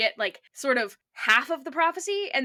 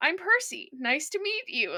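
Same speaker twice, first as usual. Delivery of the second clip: put-on little boyish voice, small and young, pitched up; 5 semitones higher than usual. Describing Percy approaching the Oracle, doing Percy's little season one voice. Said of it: "little season one voice".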